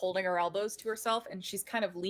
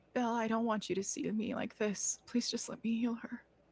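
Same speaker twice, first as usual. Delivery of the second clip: very soft, very quiet, hushed voice; 3 semitones higher, 3 dB quieter than usual. Tabletop player speaks in character to Belle; very quiet. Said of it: "hear very quietly".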